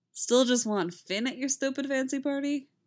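light, ribbing, playful teasing tone. Narrator reading Poe's question to Ray, asked teasingly. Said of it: "Poe asks teasingly".

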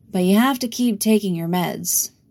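ordinary delivery

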